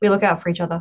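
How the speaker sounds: secretive, confiding, confidential delivery. Speaking in character to a companion about the guards: hushed tone. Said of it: "I'm talking in, like, a hushed tone, like, real quiet".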